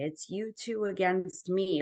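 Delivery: mild, half-yelled, jealous accusing tone. Retelling what an ex-husband screamed about the newborn: imitating someone screaming. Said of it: "he would start just screaming at me".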